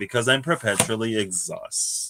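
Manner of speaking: ordinary delivery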